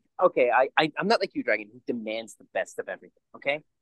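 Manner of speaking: normal talking voice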